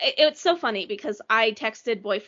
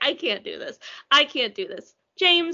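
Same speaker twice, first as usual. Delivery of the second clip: usual speaking voice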